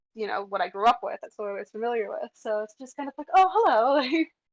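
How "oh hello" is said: polished, bright, pitched-up customer-service voice. Showing the customer service voice copied from mom: imitating mom's customer service voice. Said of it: "my tone and my voice mimics the way that she did it".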